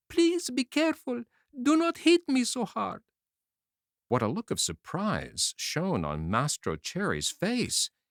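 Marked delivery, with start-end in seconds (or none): 0.1-3.0 tiny, wee, very high, beseeching, pleading voice. Reading a story, a wee voice speaks to the man about to strike the wood: wee little beseeching voice. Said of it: "a wee little voice say in a beseeching tone".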